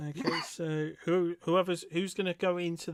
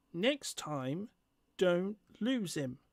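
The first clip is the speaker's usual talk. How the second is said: tiny, little, wee goblin creature voice. A game master voices an unseen figure behind the tailing players; little voice. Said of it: "you hear a little voice go".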